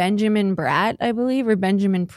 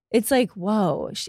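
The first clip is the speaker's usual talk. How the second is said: ordinary talk, nothing marked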